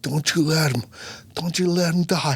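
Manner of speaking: frantic, desperate, begging, pleading cry. Retelling the night he feared his baby was stillborn, re-enacting screaming at God. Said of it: "I'm like screaming at God".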